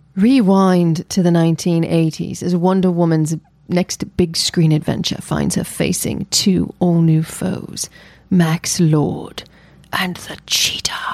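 theatrical reading, British accent drifting in and out. Reading a film's storyline from IMDb aloud, in a dramatic half-British accent. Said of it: "With a half-British accent?".

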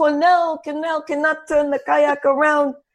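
put-on man's yelling, sounding mortified. Retelling how a man yelled at you during the water sports, imitating a man yelling. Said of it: "And he's yelling".

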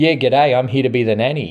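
imitated Australian accent. Mocking how the nanny character just shows up, imitating an australian accent. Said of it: "her Aussie accent".

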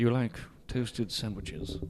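playfully fake, put-on seductive voice. Reenacting a conversation the group called sexual, in a mock-seductive voice. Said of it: "the single most sexual conversation".

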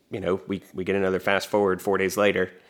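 plain

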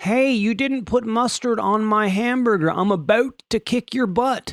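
put-on Canadian accent, drifting Southern. Acting out an angry customer over missing mustard: attempted Canadian accent. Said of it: "I wish I could do a Canadian accent".

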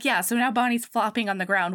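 normal talking voice

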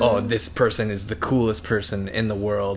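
ordinary talk

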